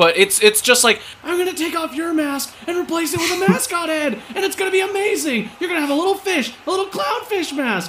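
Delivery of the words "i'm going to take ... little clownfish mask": shrill, muffled, very high screaming. Voicing a masked wrestler charging at another masked wrestler: muffled screaming. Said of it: "she starts screaming".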